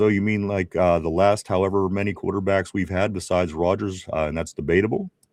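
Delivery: plain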